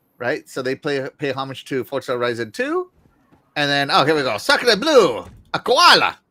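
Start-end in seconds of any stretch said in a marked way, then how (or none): 4.4-6.1 drawn-out, put-on Australian French guy accent. Commentating on a game video, joking: australian french guy voice. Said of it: "That is my Australian French guy".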